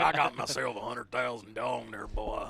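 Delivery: big, exaggerated, deep put-on voice. Showing how the line should be said, in a deep girth voice. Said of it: "you got to do it with that deep girth voice".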